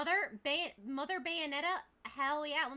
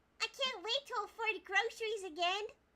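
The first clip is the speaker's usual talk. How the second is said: high, pitched-up put-on anime-style cartoon voice; 6 semitones higher than usual. Asked by another speaker to repeat the line: Anya voice. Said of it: "say that in the Anya voice".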